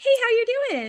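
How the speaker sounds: very high-pitched put-on voice. Trying out a voice while talking about a wedding ring, high put-on voice. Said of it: "should I talk from this voice up here?".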